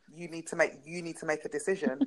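normal talking voice

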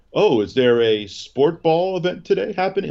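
obnoxious, smug, high, faux-clueless hipster voice. Imitating hipsters who act like they don't know the Super Bowl: mocking a smug hipster. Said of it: "the douchebags that like to say".

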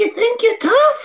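very high-pitched voice that cracks. Retelling Keith Lee taunting Sheamus as he gets off the floor, in a high-pitched Keith Lee impression. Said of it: "in a very high pitched voice".

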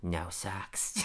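soft, sensual, purring murmur. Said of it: "The sensual way he said it".

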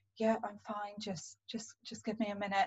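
quiet voice. Retelling answering Jordan, who asked if they were okay, in a quiet voice. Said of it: "I had that quiet voice again".

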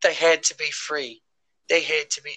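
put-on hint of a British accent. Discussing the ending of Fallen Kingdom, slipping into a slight British accent. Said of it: "I almost did like a little British accent there".

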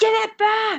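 mock screaming, very high, shrill and loud. Telling a story, acting out how her friends reacted, retelling friends screaming. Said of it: "my friends were all screaming".

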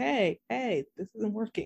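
automated tannoy-style PA alarm announcement voice. Acting out a building warning system announcing a fault: put-on loudspeaker warning voice. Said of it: "spoken just like that over a loudspeaker".

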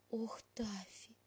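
very hushed whisper, aghast with horror. Elli whispers to Tafi, who has done something terrible: horrified whisper. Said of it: "в ужасе прошептала она".

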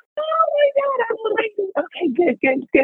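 thrilled, very high, excited squeal.

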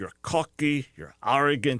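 put-on Scottish accent, rebuking tone. Recounting a school director scolding a student, imitating a Scottish accent. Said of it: "his Scottish accent".

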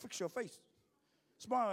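loud, called-out Samoan dad voice. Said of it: "and then the Samoan dad goes".

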